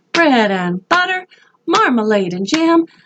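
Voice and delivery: high, squeaky little mouse voice. A speaker leads a voice exercise in high sounds, squeaky mouse voice. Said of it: "Can you sound squeaky like this? Like a little mouse?".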